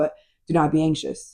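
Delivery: ordinary delivery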